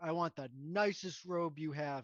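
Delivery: would-be intimidating, almost menacing delivery. Playing a character at a shop counter: trying to sound intimidating. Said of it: "trying to, like, sound, like, almost intimidating".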